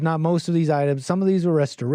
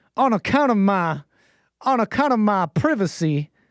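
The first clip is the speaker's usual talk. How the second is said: put-on Savannah Southern belle accent; 4 semitones higher than usual. Speaker voicing a character from Savannah, in a Southern belle accent. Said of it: "who's that Southern Belle?".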